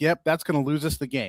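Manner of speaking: ordinary talk, nothing marked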